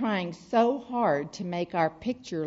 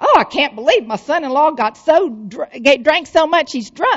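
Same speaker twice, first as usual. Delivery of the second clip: loud, much higher-pitched mock voice; 8 semitones higher, 10 dB louder than usual. Speaker retells what Mama kept saying while walking through the airport, in a loud voice. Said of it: "she keeps saying in a loud voice".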